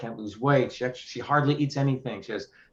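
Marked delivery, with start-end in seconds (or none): none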